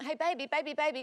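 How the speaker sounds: soft, nervous pleading.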